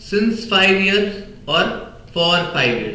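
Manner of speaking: slow contrast, stress on since, then on for.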